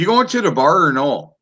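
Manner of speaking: put-on Wisconsin local accent. On a show, after talk of impressions, doing a Wisconsin accent impression. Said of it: "you're doing an impression of someone from Wisconsin".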